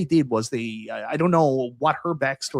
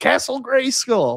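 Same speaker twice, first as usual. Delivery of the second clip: put-on high, slow, thrilled kid voice. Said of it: "that kid is just so excited".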